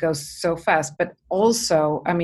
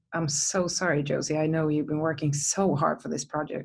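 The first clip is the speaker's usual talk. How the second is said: put-on near-crying voice, quieter; 5 dB quieter than usual. Retelling a sad phone call from an executive producer: imitating someone almost crying. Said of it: "he was almost crying".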